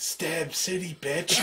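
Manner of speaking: hushed whisper. Player narrating a game character stepping out behind a guy, whispering. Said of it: "you just lean down and whisper".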